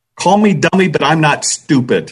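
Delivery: brusque, terse, curt, short delivery. Recounting a comment made on a forum, the speaker retells saying it tersely. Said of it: "And I said it rather tersely".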